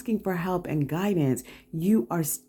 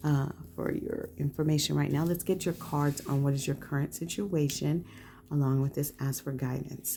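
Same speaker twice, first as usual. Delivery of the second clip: softer, lowered, hushed voice. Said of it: "I'm lowering my voice a little".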